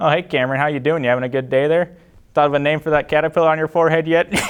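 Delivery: jokey, friendly teacher voice. Giving your best impression of Mr. Gagne, who taught you, greeting Cameron: Mr. Gagne impression. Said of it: "Here's my best Mr. Gagne impression".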